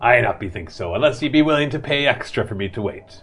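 pirate-sounding sea captain character voice. Voicing a ship captain asking extra gold to wait: pirate-sounding voice. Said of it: "I might sound like one".

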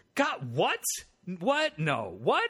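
high, drawn-out, stunned and incredulous shocked disbelief. Showing the proper reaction to a shocking statement: acting shocked disbelief. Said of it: "the proper reaction is".

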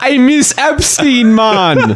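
put-on Caribbean accent. Improvising a character complaining about the parties: put-on Caribbean accent. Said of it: "It was like Caribbean".

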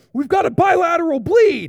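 very high, shrill, very loud barked yelling. Retelling the speaker's sister yelling to her medical team: retelling a yell. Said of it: "she's yelling like".

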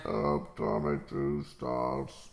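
rough, very low, creaky put-on voice. A host opens the show and introduces the co-host in an Ultron voice. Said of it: "What's with the voice?".

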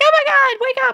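very high, loud panicked pleading. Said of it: "She's like".

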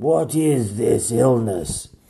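croaking, sick-sounding voice. Narrator reading a sick king asking his doctors, croaking. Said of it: "He croaked".

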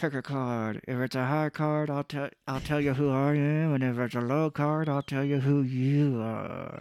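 talking through clenched teeth. Imitating Nicolas Cage in a movie: Nicolas Cage talking through teeth. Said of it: "But he's like".

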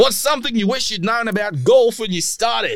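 high-pitched, failed Geordie accent.

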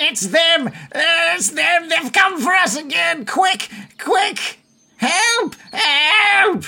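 very high, panicked, frantic goblin voice crying out. Voicing goblins calling out as they paddle frantically into water: frantic goblins calling out. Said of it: "you can hear them calling out".

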